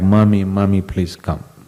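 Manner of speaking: normal talking voice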